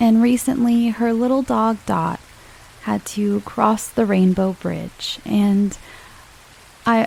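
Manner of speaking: choked up mid-sentence, voice breaking. Podcast host thanking a friend from the Facebook group, getting choked up. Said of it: "I'm getting choked up again".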